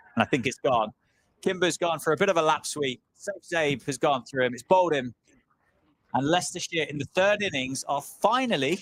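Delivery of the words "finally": strong, heavy stress on "finally". Cricket commentator announcing Leicestershire all out, stressing the word finally. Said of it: "and I'll stress the word finally".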